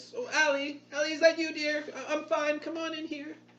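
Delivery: put-on very high-pitched elderly woman's voice calling out. Storyteller narrating a scene voices a woman calling from inside, old woman voice. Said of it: "the old woman's voice".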